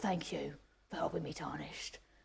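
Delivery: low, gruff, gravelly, rough murmuring character voice. Describing a video game character, the speaker imitates his line in a gruff game character voice. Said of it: "He's got a very gruff voice".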